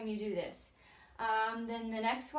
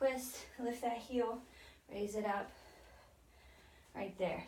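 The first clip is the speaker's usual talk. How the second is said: out of breath, much quieter; 7 dB quieter than usual. Someone leading a workout calls out the next move, out of breath. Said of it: "I'm already out of breath".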